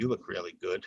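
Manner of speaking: tone at odds with words. Demonstrating mixed messages to listeners, say it in an insincere tone. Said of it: "are my words matching my tone?".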